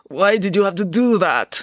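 pained groan, pitched high. Reading a story, a man kicked to the ground questions his attacker, groaning. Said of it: "Groaned Yuri from the ground".

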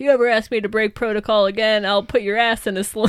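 put-on yelling in an angry character voice. Retelling a scene where Skinner yells at Scully: imitating Skinner yelling. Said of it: "yelling at Scully".

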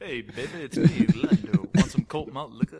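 booming, very loud, sleazy smooth-talking voice. Riffing with friends about love bots, the speaker plays Lando: sleazy Lando voice. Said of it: "made Lando the sleaziest guy in the universe".

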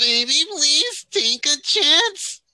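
very high, shrill, squeaky helium-like whine. Parody how she sounds for your listener, in a terrible whining put-on voice. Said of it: "That's a terrible parody".

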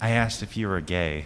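ordinary talk

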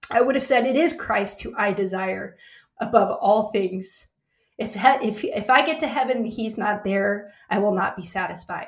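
tearful crying voice, breaking on the words. On a podcast, recalling a past season of anxiety, the speaker is crying while speaking. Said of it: "I'm crying on the podcast today".

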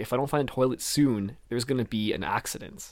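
ordinary delivery

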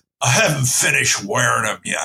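put-on acted old man's voice. Retelling a story, you speak the old man's reply, imitating the old man's voice. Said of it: "I'll just do his voice".

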